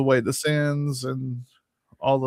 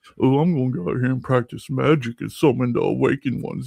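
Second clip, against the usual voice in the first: haughty, snobby, upper-crust voice. Describing the kind of person Aleister brings to mind: imitating a snobby rich person. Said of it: "a snobby person that was born into wealth and is like".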